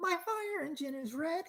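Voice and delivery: very high, unpractised, bad cartoon mouse voice. Remembering a Disney toy that showed colors, in a Mickey Mouse voice. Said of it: "Mickey was red and he's like".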